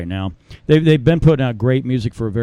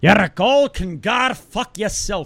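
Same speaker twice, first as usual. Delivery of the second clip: poor put-on Irish accent, very high-pitched; 9 semitones higher than usual. Voicing the Irish Council refusing a band's show, in a bad Irish accent. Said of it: "I'm horrible at fucking Irish accents".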